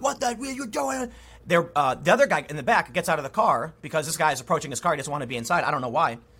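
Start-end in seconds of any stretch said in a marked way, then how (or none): 0.0-1.1 outraged shouting and screaming, pitched up. Retelling a story of a driver who was rear-ended: imitating someone yelling and screaming. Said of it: "yelling and screaming".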